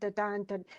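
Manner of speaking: soft iambic da-dun rhythm, stress on dun. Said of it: "I'm just going to stress it".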